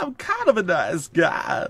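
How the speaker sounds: stretched out, high and swooping. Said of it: "my very bad John Travolta impression".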